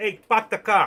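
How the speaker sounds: put-on Boston accent, loud and high. Joking about Boston people, the speaker imitates a Bostonian, Boston accent. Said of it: "in Boston, they park it".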